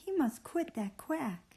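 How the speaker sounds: emphatic, high, emotional exclaiming delivery. Showing listeners how to read an exclamation aloud: exclamation said with emotion. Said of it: "So when it's an exclamation".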